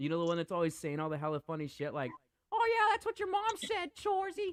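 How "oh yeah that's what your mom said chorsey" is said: very high-pitched put-on Canadian accent. Reminding another person of a funny character from a show, do a Letterkenny character voice. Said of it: "sounds like that character from Letterkenny".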